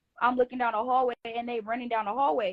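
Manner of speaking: plain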